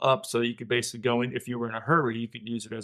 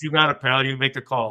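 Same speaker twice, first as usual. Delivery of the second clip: put-on, slight Brooklyn accent, louder; 2 semitones higher, 6 dB louder than usual. Retelling Jim's answer when pressed to gaff, imitating Jim's slight Brooklyn accent. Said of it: "in his slight Brooklyn accent".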